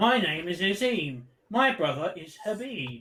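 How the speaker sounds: put-on automated robotic phone voice. Mimicking a man who talks like a robocall, introducing himself: imitating a robocall voice. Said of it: "this guy talks like a robocall voice".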